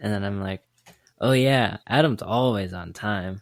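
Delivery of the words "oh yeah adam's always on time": mocking, sarcastic echoing tone. Demonstrating a reply to someone's claim about himself, in a sarcastic, mocking tone. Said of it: "Like you say it with that kind of tone".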